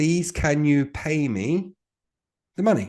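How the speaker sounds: calm, deliberate, after a deep breath. Demonstrating how to ask for payment, after a deep breath. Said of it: "I'm going to take a deep breath and we say these words".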